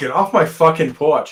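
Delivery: native New England Boston accent. Asked to say a line, the speaker demonstrates it: boston accent. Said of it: "Can you say, get off my porch".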